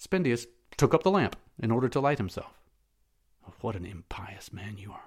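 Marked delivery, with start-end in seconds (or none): 3.6-5.0 hushed, low mutter under the breath. A man follows his companion, who lights the way with a lamp; muttering. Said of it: "muttered Matho".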